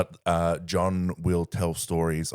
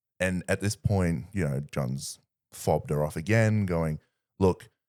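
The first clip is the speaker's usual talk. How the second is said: usual speaking voice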